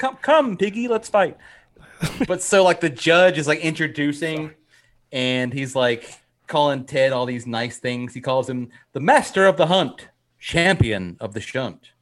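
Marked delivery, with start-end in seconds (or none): 0.0-1.4 very high frog puppet voice. Retelling a story of two men about to fight, doing a Kermit the Frog voice. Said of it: "nice Kermit voice".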